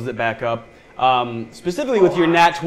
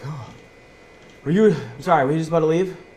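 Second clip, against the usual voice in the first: winded, panting, out-of-breath voice; 2 semitones higher than usual. Game master voicing a character who has run up to the players, out of breath. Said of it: "running up to you just like out of breath".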